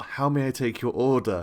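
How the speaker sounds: passive-aggressive voice. Voicing a waiter taking an order: passive-aggressive server voice. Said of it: "in the most passive-aggressive server way possible".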